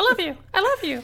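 very high, squeaky chipmunk voice. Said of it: "so they just hear me in, like, a chipmunk voice".

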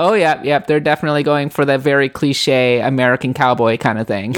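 ordinary delivery

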